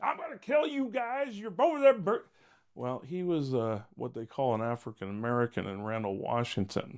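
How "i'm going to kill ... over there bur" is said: very high, shrill, wild screaming and yelling. Retelling a drugged neighbor's threat at the window: imitating someone screaming and yelling. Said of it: "starts screaming and yelling".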